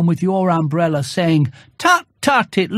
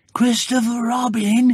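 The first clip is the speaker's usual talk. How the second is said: loud, carrying stage whisper; 4 semitones higher than usual. Unable to reach the honey, he calls down to Christopher Robin; loud whisper. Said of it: "he said in a loud whisper".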